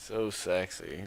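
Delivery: disgusted, grossed-out, repulsed tone. Describing a T-shirt with no panties on, sounding disgusted. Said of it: "you sound disgusted".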